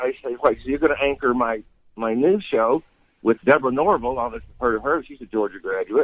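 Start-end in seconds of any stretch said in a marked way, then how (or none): none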